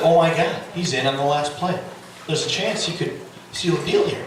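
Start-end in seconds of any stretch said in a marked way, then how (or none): none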